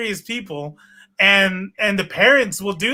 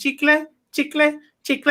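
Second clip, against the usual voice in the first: put-on high-pitched small child voice calling out; 6 semitones higher than usual. Describing kids knocking on car windows at the border, imitating little kids selling gum. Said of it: "they knock on your window and they're like".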